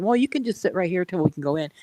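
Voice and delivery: ordinary delivery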